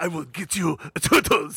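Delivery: clumsy, half-hearted, bad put-on Japanese accent. Quoting a character's line to the turtles, in a bad Japanese accent. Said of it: "like that".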